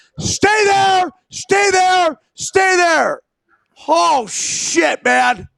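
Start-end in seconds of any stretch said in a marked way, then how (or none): 0.2-3.2 repeated high-pitched calling out. Retelling what gets yelled to young runners: retelling a yell to runners. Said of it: "I yell to runners".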